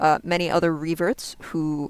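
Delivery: ordinary delivery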